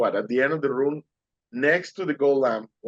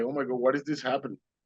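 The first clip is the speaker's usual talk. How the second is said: put-on tearful crying voice, sometimes quieter; 5 dB quieter than usual. Retelling the moment of seeing the painting, imitating own crying. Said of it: "So I started crying".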